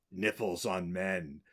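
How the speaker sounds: put-on very low, hushed, scornful delivery. Recalling a line from a movie watched as a kid, Evil's mock disdain. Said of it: "when Evil says with disdain".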